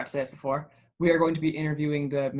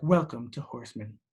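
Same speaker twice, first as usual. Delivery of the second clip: synthetic, machine-like robotic female announcer voice; 3 semitones lower than usual. A speaker imitates the mysterious voice that opens Horseman episodes, Horseman intro robot-lady voice. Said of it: "Robot lady".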